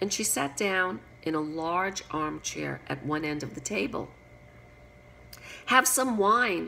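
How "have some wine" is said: very encouraging tone, louder. At a crowded table, one of the three speaks to a newly seated guest, very encouraging tone. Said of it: "in a very encouraging tone".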